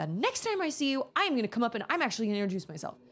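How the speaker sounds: put-on, energetic man brimming with energy. Quoting what a guy on campus told the speaker, retelling an energetic guy. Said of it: "this guy was brimming with energy".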